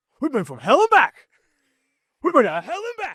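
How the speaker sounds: high, slow, fired-up yell. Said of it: "All I think of is, uh, Sugar Bowl video".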